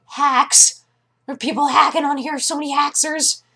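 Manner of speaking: put-on very high, loud little-kid voice. Recalling little kids online who kept yelling about hacks, imitating little kids. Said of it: "All sorts of little kids that were on there just being like".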